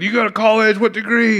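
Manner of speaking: mock eager, thrilled, high, pumped-up excited tone. Retelling how the gas station attendant asked about college: imitating someone pumped and excited. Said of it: "she's all pumped and excited for me".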